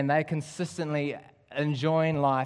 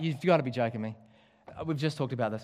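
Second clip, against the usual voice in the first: ordinary talk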